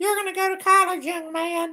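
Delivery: very high-pitched put-on voice. Retelling being told to go to college after high school: impersonating his mom. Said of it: "my best impersonation of my mom".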